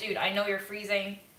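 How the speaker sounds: usual speaking voice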